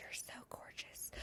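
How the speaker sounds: hushed, very soft, breathy whisper. Retelling what passing men say close to her head: imitating a whisper. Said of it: "they whisper that".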